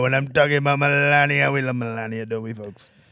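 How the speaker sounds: low, deep voice, dropped and held low. Discussing the different voices Trump uses, Trump impression, low voice. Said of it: "And then he's got low like Melania".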